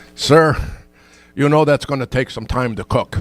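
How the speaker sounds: put-on Scottish accent with a thick brogue. Retelling a worker's reply to an order of one hundred twenty apple pies, Scottish brogue accent. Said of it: "or the Scottish accent with the brogue".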